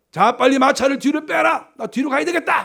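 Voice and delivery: loud, high-pitched panicked shout. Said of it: "막 소리 지르니까".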